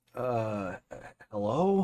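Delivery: soft, tired, weary voice. The mayor John picks up a phone call from Sophie, in a tired voice. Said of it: "he picks up with a, a, a tired voice".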